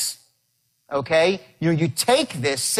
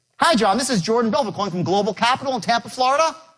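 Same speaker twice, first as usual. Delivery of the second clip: question-like rise at the end, faster; 8 semitones higher than usual. Demonstrating a phone call opening, with rising pitch at the end. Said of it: "When you raise your voice up like that".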